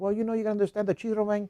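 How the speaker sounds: put-on heavy Spanish-accented speech. Retelling what a man said loudly in the barbershop, heavier Spanish accent. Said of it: "The more accent".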